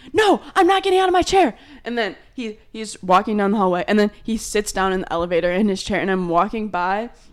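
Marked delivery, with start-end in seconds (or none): 0.1-1.5 put-on shrill, very high screaming. A speaker retells a man refusing to get out of his chair, retelling a scream. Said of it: "And he's screaming".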